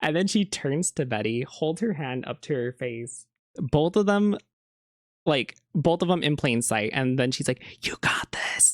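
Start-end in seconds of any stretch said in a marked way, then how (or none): 7.8-8.7 forceful whisper pushed as loud as possible. Retelling how Veronica encouraged Betty: imitating Veronica whisper-yelling. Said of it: "whisper yelled".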